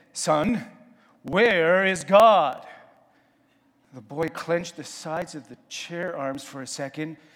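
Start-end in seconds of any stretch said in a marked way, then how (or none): 0.2-2.7 very loud, very slow, booming, drawn-out near-bellow. Retelling how a man questioned a boy in his office, retelling a near-bellow. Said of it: "almost bellowed as he said".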